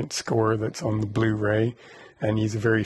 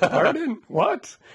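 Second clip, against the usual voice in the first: put-on old man voice, higher pitch; 13 semitones higher, 3 dB louder than usual. Retelling how an elderly author kept mishearing questions in a loud room: imitating a hard-of-hearing elderly man. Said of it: "Like this every time".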